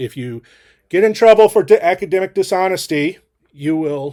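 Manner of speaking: loud projected lecturing tone. A lecturer recording a lecture speaks to students with a raised voice. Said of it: "Sorry for raising my voice".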